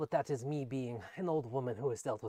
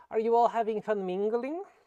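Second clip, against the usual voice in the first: very high voice, calling out a bit louder; 9 semitones higher, 6 dB louder than usual. A woman calls out to the group to get their attention, a bit louder than normal. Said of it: "speaks a bit louder than normal to get your attention".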